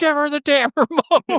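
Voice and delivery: mock shrill, very high yell. Retelling how a mom yelled from her room: imitating someone yelling. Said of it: "my mom starts fucking yelling from the room".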